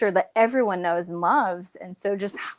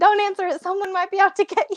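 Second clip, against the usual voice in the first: squeaky, very high-pitched voice; 11 semitones higher, 3 dB louder than usual. Retelling a call, the speaker quotes someone answering in a Mickey Mouse voice. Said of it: "and Mickey Mouse voice is like".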